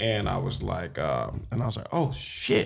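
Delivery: ordinary talk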